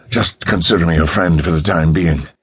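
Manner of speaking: usual speaking voice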